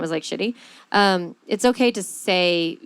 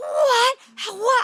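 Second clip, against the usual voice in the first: mock, very high, losing-it outburst. Retelling yelling at the kids before the airport trip: imitating own past yelling. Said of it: "I just kinda lost it".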